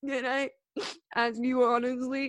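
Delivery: tearful, weepy, slow crying delivery. Retelling Tommy's question to Paul outside, imitating Tommy crying. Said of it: "He's crying".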